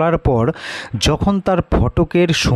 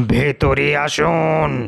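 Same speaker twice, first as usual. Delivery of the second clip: heavy, thick voice. Reading a story where someone answers from the front room: thick voice. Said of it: "মোটা গলায় সাড়া এলো".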